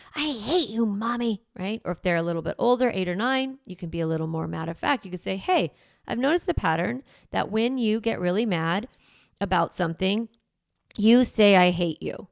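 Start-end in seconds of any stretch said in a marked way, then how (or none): 0.1-1.4 put-on big theatrical dramatic affect, slow child's wail. Showing parents how to echo a little child's outburst back, dramatic delivery. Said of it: "you're going to use kind of that dramatic affect".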